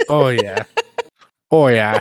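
played-up, put-on small-town Minnesota accent. Teased about putting on accents, a speaker answers in an accent like on Fargo. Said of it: "You sound like you're on Fargo".

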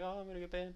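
alarmed, panicked, freaking-out delivery. Retelling how streamers reacted: imitating panicked streamers. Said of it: "They were all freaking out".

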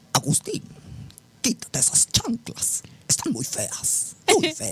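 high, sultry seductive voice. Imagine how María Félix would have spoken to her partners, María Félix impression. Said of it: "¿Cómo le habrá dicho a sus parejas?".

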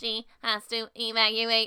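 robotic voice. Retelling a car ride with their mom, the speaker quotes themself in a robot voice. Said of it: "talking in robot voices".

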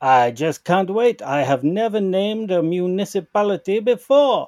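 terrible fake French accent, pitched high. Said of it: "we're doing the worst possible French accents".

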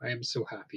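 weepy, tearful voice, crying while talking. Retelling a character crying on demand in an audition: imitating crying while talking. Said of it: "crying on demand as she's like".

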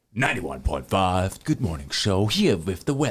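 put-on morning radio DJ announcer voice. Trying a morning show weather intro in a radio announcer voice. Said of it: "give me your best radio voice. ... Let me try".

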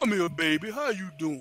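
put-on soft, heavily laid-on Southern accent. Retelling how a man called a woman over on her way to class, Richard V. Moore Southern voice. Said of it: "he talked very Southern".

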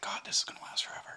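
whispered, breathy and hushed. Chatting with another speaker, saying this part in a whisper. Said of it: "You like how I whispered there?".

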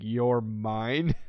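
play-acted creepy, unsettling delivery. Recalling a character's line from a friend's point: imitating someone speaking creepily. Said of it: "how he was creepily going".

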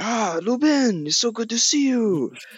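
put-on high-pitched French accent. Retelling a movie scene where Hank Azaria's character walks up, Hank Azaria French accent. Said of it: "his French accent is so funny too".

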